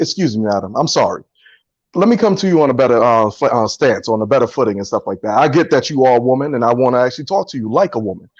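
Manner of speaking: put-on overly formal, overly polite tone, very deep. Speaker acting out his apology when a lady corrects him, acting out overly polite address. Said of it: "it's code switching for just talking to to women".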